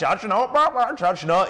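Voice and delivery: squawky parrot voice repeating words. Mocking people who only half remember a verse, the speaker does a parrot impression. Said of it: "the old parrot impression".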